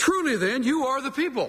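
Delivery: very high-pitched, dripping with sarcasm. Voicing Job's sarcastic reply to his three friends: sarcastic. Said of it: "having learned a little sarcasm from his friends".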